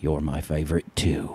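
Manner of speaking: put-on very low, deep, murmured whisper, British accent. Retelling a line whispered in her ear, in a British Lion King voice. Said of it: "in the King Lion voice, uh, which is British as well".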